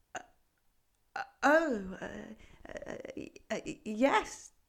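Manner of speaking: shy, timid, halting stammer, lost for words. A frog answering a goat who has questioned it, timid, at a loss for words. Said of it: "the frog said a little timidly".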